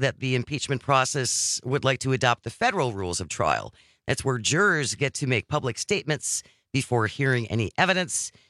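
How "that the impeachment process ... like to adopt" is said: usual speaking voice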